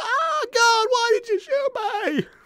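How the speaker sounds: bad anime voice, high, slow and drawn out. Imagining a voice-over for a shot character on the ground, Kazuma impression. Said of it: "as close to a Kazuma impression".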